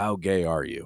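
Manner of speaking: mumbling under breath. Retelling a dad's question at the dinner table: imitating muttering under his breath. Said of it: "under his breath".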